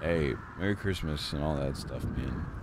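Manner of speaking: low, soft, hushed murmur close to the ear.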